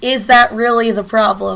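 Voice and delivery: normal talking voice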